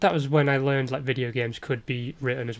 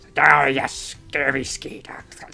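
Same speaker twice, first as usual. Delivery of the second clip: put-on pirate voice; 7 dB louder than usual. Answering what LeChuck sounded like: pirate voice. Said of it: "you've heard me do pirate voices".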